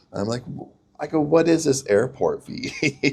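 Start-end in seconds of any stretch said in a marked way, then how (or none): 1.2-3.2 speaking while laughing. Retelling teasing about a made-up airport fee: laughing. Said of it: "And I'm laughing".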